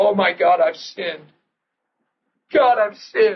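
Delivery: words wept out through sobs, bawling. Retelling breaking down in a bathroom over a sin: retelling own bawling. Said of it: "I start bawling and saying this".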